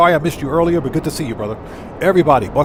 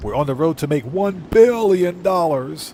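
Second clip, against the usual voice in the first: campy put-on villain voice. Host reacts to a viewer's road-to-billionaire comment, Doctor Evil voice. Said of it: "In my my Doctor Evil voice".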